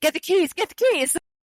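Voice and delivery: yelling.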